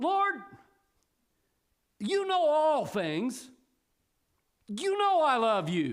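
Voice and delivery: a little upset, with attitude. Retelling Peter's reply to the Lord: Peter answering upset, with an attitude. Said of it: "said it just a little bit upset with an attitude".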